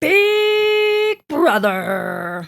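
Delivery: very high, loud announcer voice. Asked by the other speaker to copy the show's intro voice: imitating the Big Brother announcer voice. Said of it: "I wanna hear your version".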